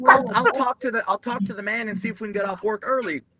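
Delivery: naive, eager, high doe-eyed hopeful voice. Retelling how the chaplains greet the guys: imitating doe-eyed false hope. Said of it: "dumb P F C doe-eyed false hope".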